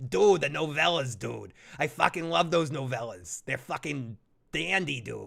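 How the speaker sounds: full-on, put-on Boston accent. Talking with Chris about a favorite show, the speaker slips into a Boston accent. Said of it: "I just totally had a Boston accent on that".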